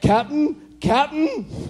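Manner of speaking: very high, bad attempted Scottish accent. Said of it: "I can't do a Scotty accent".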